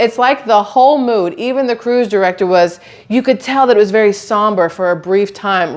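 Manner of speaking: ordinary delivery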